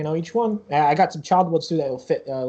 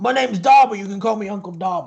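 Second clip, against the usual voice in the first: aged goblin character voice; 4 semitones higher, 4 dB louder than usual. Voicing a very old, balding goblin greeting the group, in an old goblin voice. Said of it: "very old, almost balding goblin".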